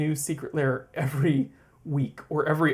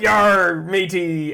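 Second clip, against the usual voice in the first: pirate talk, higher and louder; 4 semitones higher, 7 dB louder than usual. Acting out spending Talk Like a Pirate Day: talking like a pirate. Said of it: "spend the whole day like".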